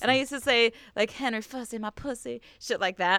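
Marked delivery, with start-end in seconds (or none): 1.1-2.4 put-on sultry Southern accent, quieter and slower. A speaker recalls the accent used whenever saying a nickname; put-on sexualized southern accent. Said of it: "really like sexualized porno like Southern accent".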